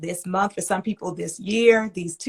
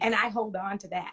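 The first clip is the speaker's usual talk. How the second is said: plain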